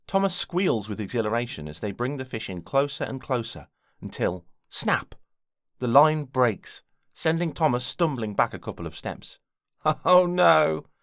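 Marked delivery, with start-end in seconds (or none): 10.0-10.7 high, rueful little laugh of letdown. Wiggle reacts as the fishing line snaps and the fish is lost, disappointed chuckle. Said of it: "Wiggle says with a disappointed chuckle".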